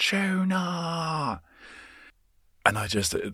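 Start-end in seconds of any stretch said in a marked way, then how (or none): 0.0-1.4 put-on, very high, stretched shout in thick near-Australian accent. Imitating a woman shouting her dog's name to call it back: intense accented shout. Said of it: "intense the accent was".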